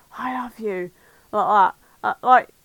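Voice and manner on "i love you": put-on breathless, breathy voice, slower. Retelling a voice on TV that the speaker and Mum squinted at, mimicking a breathless 'I love you'. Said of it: "it was just some breathless".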